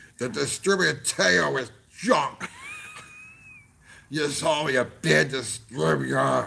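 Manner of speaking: put-on slurred, mushed-together, drunken-sounding voice. Quoting a drunk customer's angry email: imitating drunk slurred speech. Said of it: "this guy literally wrote us in slurred speech".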